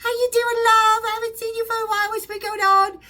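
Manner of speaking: put-on tiny, very high voice with English accent. Retelling a phone call from Sharon Osbourne: imitating Sharon Osbourne's English voice. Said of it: "a tiny little English voice".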